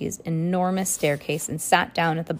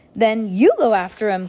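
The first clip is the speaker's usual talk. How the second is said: loud, urgent, raised cry; 4 semitones higher, 6 dB louder than usual. Klaus cries out to mr. poe. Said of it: "Klaus cried".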